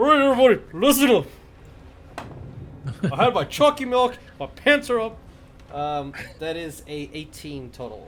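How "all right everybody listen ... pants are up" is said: very loud, very high, rushed tough-guy voice. A player rolls intimidation and addresses everybody in character, in a big boy voice. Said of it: "you're putting your big boy voice on".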